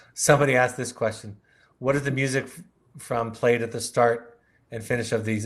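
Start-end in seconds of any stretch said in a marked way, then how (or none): none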